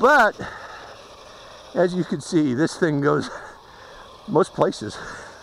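out of breath, winded, halting, broken phrases between words. Demonstrating a transforming vehicle on the grass, the speaker talks out of breath. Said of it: "I'm out of breath now".

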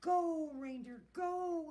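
high, very loud shouting. Santa cracks his whip and urges his reindeer toward the moon, shouted. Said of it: "he shouted".

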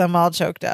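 normal talking voice

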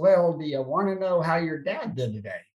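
ordinary delivery

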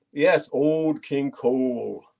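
very slow speech in a German accent. Naming a picture on an auction item aloud: channeling Helmut Kohl accent. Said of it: "I had to do it with that kind of a accent".

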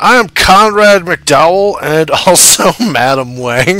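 slow, giggling, laughing through the words. Introducing own game characters to the other players, laughing while talking. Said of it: "I can't even say it with a straight face".

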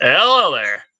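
amateurish put-on Southern accent. Greeting viewers while having a nosebleed, in a put-on southern accent. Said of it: "So I'll do this in a southern accent".

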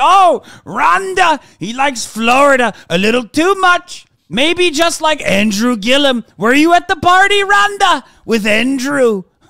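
very loud, high, slow put-on voice, belted out. Imagining what Donald Trump should say instead: Donald Trump impression. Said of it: "Your impression is definitely better than mine".

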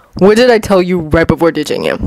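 ordinary delivery

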